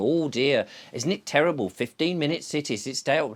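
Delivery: ordinary talk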